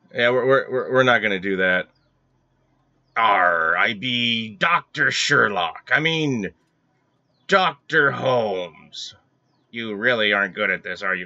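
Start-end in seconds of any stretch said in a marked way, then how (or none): 3.2-9.2 very slow, drawn-out pirate voice. Playing through a puzzle game, talking like a pirate. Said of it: "Are you talking like a pirate?".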